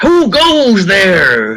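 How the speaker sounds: ghost pirate voice, yelling. Voicing a ghost pirate calling out to a stranger: ghost pirate yelling. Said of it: "he yells".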